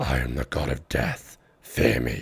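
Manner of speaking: voice-straining put-on voice. Doing a short bit in short bursts: voice-straining put-on voice. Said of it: "That destroyed my voice".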